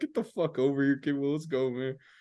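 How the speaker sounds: words broken by laughter. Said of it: "They're just dying laughing".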